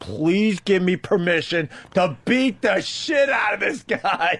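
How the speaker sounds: acted-out yell as hard as possible, high, drawn-out. Retelling the moment after the incident, imitating own yelling. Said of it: "yelling as loud as I can".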